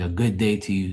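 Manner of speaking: ordinary talk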